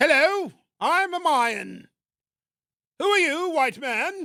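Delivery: very high, loud, royal posh British accent. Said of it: "making the Incas and the Mayas sound like British royalty".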